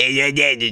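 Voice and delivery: small, chummy, casual little dude voice. Retelling a first meeting outside, imitating a shrill little voice. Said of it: "shrill little voice that is around my ankles".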